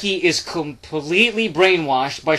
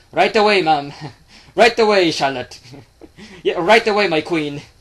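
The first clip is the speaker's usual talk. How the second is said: horrible, clumsy put-on Irish accent. Acting out Becky answering a request to fix a sandwich, in bad Becky Lynch Irish accent. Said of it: "she's gotta have that Irish accent".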